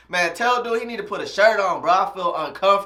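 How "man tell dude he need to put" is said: usual speaking voice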